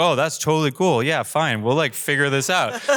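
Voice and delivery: faked, forced, breezy calm, brushing it off. Retelling a call about an exploded drone, acting out forced calm. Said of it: "but I was trying to not be stressed".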